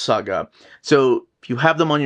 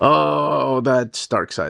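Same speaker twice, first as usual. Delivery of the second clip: normal talking voice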